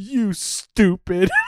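put-on spiteful, venomous, vitriolic delivery, high pitch. Retelling a wrestler's promo insult to another speaker: imitating a vitriolic insult. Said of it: "The vitriol in his voice as he's going".

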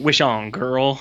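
put-on sassy voice. Retelling a movie scene where Jin answers a girl: imitating Jin's sassy line. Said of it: "really, really sassy".

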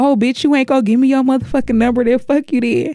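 fast, crude, mild half-yell from a distance. Retelling a cousin yelling out the window at the speaker, imitating cousin yelling. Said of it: "he's yelling out the window like".

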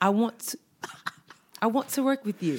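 bad put-on British accent. Asked to say a phrase in a British accent, trying it again, bad British accent. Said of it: "say in your British accent".

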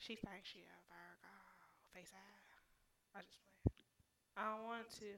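hushed whisper. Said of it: "I'm whispering".

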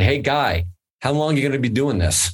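put-on Brooklyn accent. Quoting the owner of a Brooklyn restaurant speaking to a photographer, in a Brooklyn accent impression. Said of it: "That was my best Brooklyn accent".

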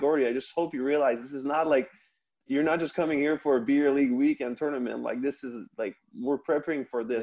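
ordinary talk, nothing marked

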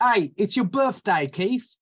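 slow, high, attempted British accent. Joking about a name, voicing a British Keith: British accent. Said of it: "a British Keith".

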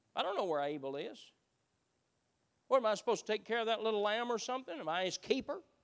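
evasive, mocking, dismissive sarcasm. Acting out people who attack the men of God: acting out Cain's sarcasm. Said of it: "they sound just like Cain".

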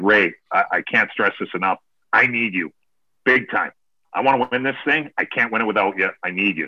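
put-on pleading, begging tone. Retelling begging someone to come play golf: retelling own begging. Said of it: "I basically just begged and pleaded".

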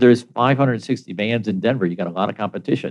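ordinary talk

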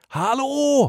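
very high-pitched, loud yell.

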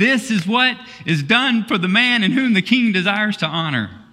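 high, full-throated shout at the top of the lungs. Retelling the story, leading Mordecai through the streets: Haman shouting at top of voice. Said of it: "at the top of his voice".

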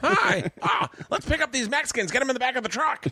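put-on very high-pitched, girlish teenage-girl voice. Imitating Ari's old voice after hearing it was high pitch like a teenage girl: imitating Ari's old high-pitched voice. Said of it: "Ari's used to be a high pitch, like a teenage girl".

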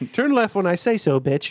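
smug, attitude-filled navigation voice. Imagining a rude GPS giving directions: imitating a rude GPS voice. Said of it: "there was a smart ass setting".

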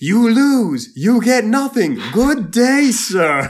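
very high, very loud, slow, drawn-out, dismissive belting. Quoting the D A as if he were Willy Wonka: Willy Wonka voice. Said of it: "the D A is like Willy Wonka".

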